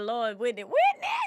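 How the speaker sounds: very loud, high, screaming wailing cry. Retelling grieving a celebrity death, reenacting own screaming and crying. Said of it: "I'm talking about screaming, crying".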